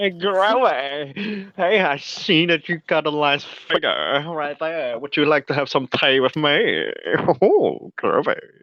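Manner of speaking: slow, drawn-out mocking put-on voice. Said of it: "You're gonna become Austin Powers".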